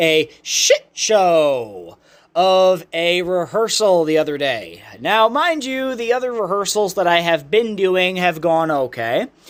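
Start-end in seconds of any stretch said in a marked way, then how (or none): 0.0-2.0 deliberate voice crack on "shit show", "show" stretched out. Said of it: "I'm gonna see if I can do it again".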